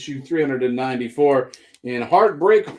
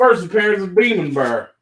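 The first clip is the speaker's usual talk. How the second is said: southern US twang accent; 4 semitones higher, 3 dB louder than usual. Listing comic issues and naming a character, in a southern accent. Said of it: "hard to try and suppress my southern accent when I say Demon Bear".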